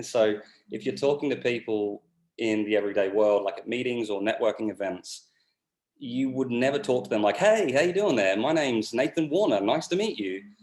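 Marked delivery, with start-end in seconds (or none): 7.4-10.4 way too animated, sunny, high and swooping. Demonstrating how one might greet someone at a networking event, overly animated. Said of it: "It's too animated".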